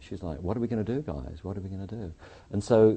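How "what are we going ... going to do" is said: put-on, hushed, rushed, a little freaked-out fretting. Retelling how someone reacted in a meeting: imitating someone freaked out. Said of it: "She's a little freaked out".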